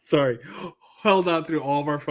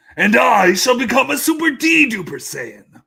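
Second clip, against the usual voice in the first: loud, high, dramatic, belted-out delivery; 8 semitones higher, 8 dB louder than usual. Offering to do a Vegeta instead of Mister Belding. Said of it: "I could do, like, a Vegeta".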